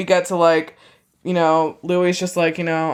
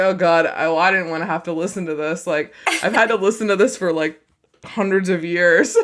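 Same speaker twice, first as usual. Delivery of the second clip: normal talking voice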